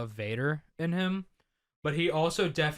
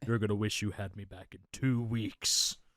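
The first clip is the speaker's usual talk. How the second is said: deep, low character voice, dropped right down; 6 semitones lower, 4 dB quieter than usual. Quoting a video game villain after talk of his inspiration: Wilson Fisk impression. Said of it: "Travis Willingham as him in the P S four game".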